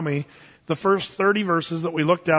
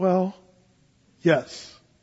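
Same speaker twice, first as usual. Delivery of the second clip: mock-hesitant, put-on hesitant tone. Retelling a man's answer about giving up pot, imitating a hesitant answer. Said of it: "but you sound so hesitant".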